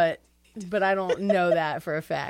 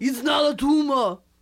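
loud, high, belted-out put-on voice; 8 semitones higher, 5 dB louder than usual. Doing an impression of Arnold yelling a movie line: Arnold Schwarzenegger impression. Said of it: "Is that your Arnold?".

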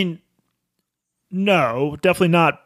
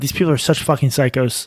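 ordinary talk, nothing marked

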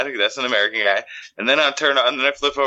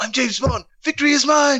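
put-on British accent, higher. Joking about an American Bond, answering in a Stewie voice. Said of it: "he actually does the voice of Stewie".

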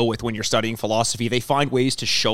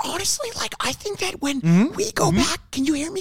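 half-whispered, pitched very high. Talking into a microphone, checking they can be heard, half-whispering. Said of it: "Because I'm kind of whispering".

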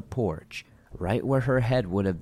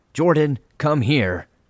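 loud, angry shout pitched up, carrying far; 5 semitones higher, 8 dB louder than usual. Reading a story where a grandmother's voice calls out: angry call. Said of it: "and angrily say".

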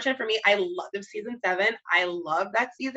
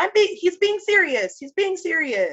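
insistent, firm, higher-pitched, slightly scolding tone; 8 semitones higher, 3 dB louder than usual. Retelling a televised apology, imitating Jerry Seinfeld's delivery. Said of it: "And he said it like that".

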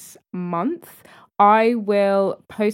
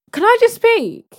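very high, loud raised voice; 7 dB louder than usual. Asking another speaker to let them talk: raised voice. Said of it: "if you raise your voice".

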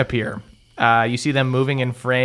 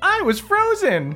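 put-on very high-pitched, dorky little kid voice. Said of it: "Moonwan looks at you guys".

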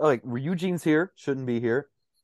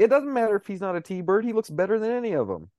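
mock shouting, high yell; 7 semitones higher than usual. Retelling what is yelled at the screen during a movie: imitating screaming at the screen. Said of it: "which I'm screaming at the screen".

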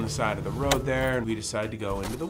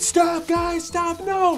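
very high, very slow, drawn-out screaming; 7 dB louder than usual. Retelling how he screamed at the group pushing him: retelling someone's screaming. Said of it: "he's like screaming".

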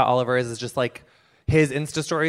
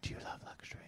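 very quiet, breathy, breath-only whisper. Retelling how the owners talk to their dog while brushing him: imitating a whisper. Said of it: "they whisper luxury".

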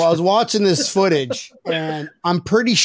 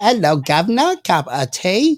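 slower, put-on, prim and proper British accent. Talking about accents, doing a prim and proper British accent. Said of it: "very elegant and proper, prim and proper".

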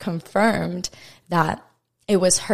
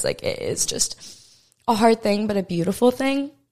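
crying, tearful, swooping voice; 3 semitones higher than usual. Sharing an experience with a past loved one with viewers, crying while talking. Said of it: "I'm crying. Sorry, guys".

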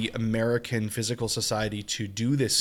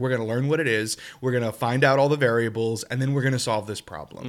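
ordinary talk

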